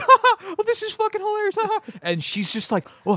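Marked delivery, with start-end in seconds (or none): 0.0-1.8 very high, helpless, hysterical laughing. Retelling laughing in a girl's face while getting hit, imitating hysterical laughter. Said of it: "laughing hysterically".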